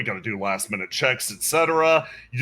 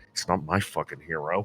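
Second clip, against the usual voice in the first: hushed, quiet half-whisper off to the side; 10 semitones lower, 7 dB quieter than usual. Voicing someone who half-whispers next to a player character: half-whispering NPC. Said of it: "You hear somebody whisper next to you".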